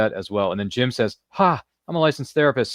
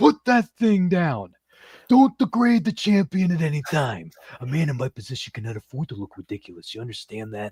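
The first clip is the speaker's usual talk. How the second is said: hyped wrestling title-fight promo announcer voice; 3 semitones higher than usual. Retelling a wrestling promo, speaker quotes Macho Man to Mean Gene in a Macho Man Randy Savage impression. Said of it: "It's a great impression".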